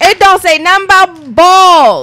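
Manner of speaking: full-volume, loud, high-pitched yelling. Arguing with another speaker about candy, yelling. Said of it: "Why are you yelling?".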